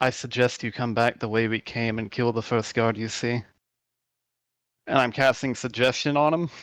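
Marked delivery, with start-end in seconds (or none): 0.0-3.4 hushed whisper. Playing their character at the table, hiding their face from the others, whispering. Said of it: "I'm gonna basically whisper to him".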